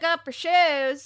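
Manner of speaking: put-on Alabama accent. A speaker retells a call to Jill from when they lived in Alabama, put-on Alabama accent. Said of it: "we were from Alabama, so it's more like Jill".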